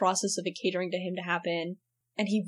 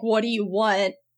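mock screaming character voice; 2 semitones higher, 6 dB louder than usual. Describing a favorite scene, the speaker quotes Steven's line: imitating Steven screaming. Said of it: "after Steven screaming like".

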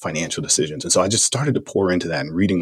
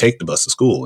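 put-on father voice, yelling bluntly; 4 semitones higher, 4 dB louder than usual. Retelling a father finally yelling at a pestering teen: imitating father yelling. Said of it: "he eventually just yelled at me and said".

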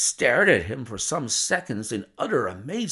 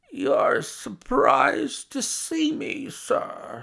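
very high, slow, strange croaking voice; 13 semitones higher than usual. Narrator reading, an old book collector addresses the narrator: strange croaking voice. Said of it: "in a strange, croaking voice".

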